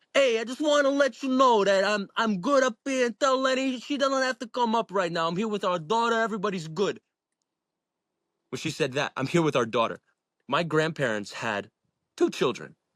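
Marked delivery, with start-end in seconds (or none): 0.2-7.0 put-on very high, heavy, old Bronx Italian accent. Retelling an Irish-accented woman who suddenly spoke like an old Italian from the Bronx: old Italian Bronx accent. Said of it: "like an eighty year old Italian from the Bronx with a deep accent".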